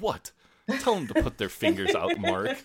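very high, swooping mock-indignant outburst. Retelling Jeremy reacting to the missing anaesthetist: imitating indignant Jeremy. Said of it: "where Jeremy acts all indignant".

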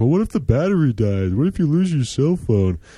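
put-on high-pitched nitpicking commenter voice. Mimicking online commenters finding reasons to hate a bike, in commenter voice. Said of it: "That's my commenter voice".

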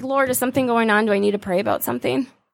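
ordinary delivery

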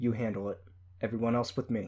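ordinary delivery

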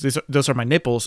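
plain

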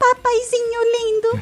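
adult doing a very high fake child voice. Praising a voice actress who dubs children, imitate Lizete's child voice. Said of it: "um adulto fazendo voz de criança".

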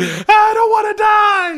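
very high, slow, drawn-out shrieking scream. Retelling a movie scene where a character starts screaming: imitating someone screaming. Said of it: "she just starts screaming".

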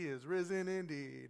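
subdued, reserved, drawn out with no fire. Speaker leading a church crowd shows how Lutherans answer, imitating a Lutheran congregation. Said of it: "all Lutherans are going to be like".

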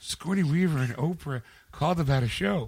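put-on sleepy dazed voice. Retelling words said in a sleepy daze: imitating sleepy daze talk. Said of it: "in a sleepy daze, she's like".

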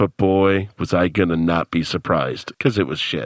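mock deadpan voiceover. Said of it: "Now we're all just talking deadpan".

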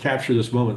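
ordinary talk, nothing marked

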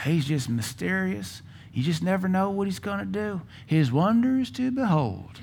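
deliberately put-on Southern accent, soft and high. Quoting what some Christians say about God's ways: put-on Southern accent. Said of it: "we purposely put the Southern accent on there".

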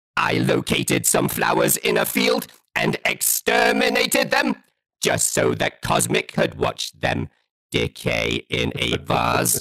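robotic alien speech. Retelling a bit once performed for a mutual friend, in a Dalek voice. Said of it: "I had the Dalek come in and go".

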